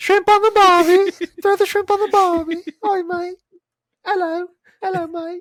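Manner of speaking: very high put-on Australian accent. Asked by a co-host to demonstrate, the speaker does a female Australian accent. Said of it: "female Australian accent".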